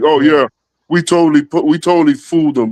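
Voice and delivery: goofy, dopey, smug, gloating boast. Retelling how the people behind the show bragged: mocking imitation of goofy bragging. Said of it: "that goofy asses really did be like".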